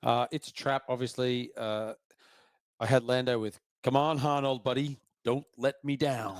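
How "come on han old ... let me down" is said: put-on deep, smooth voice. Quoting a favourite movie line: imitating Lando. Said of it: "He sounded like it".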